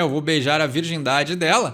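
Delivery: ordinary delivery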